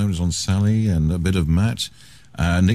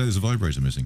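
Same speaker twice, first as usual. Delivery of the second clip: normal talking voice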